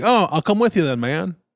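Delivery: put-on heavy Southern accent. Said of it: "the accent was pretty thick".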